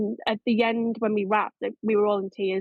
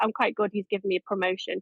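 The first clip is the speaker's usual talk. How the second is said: usual speaking voice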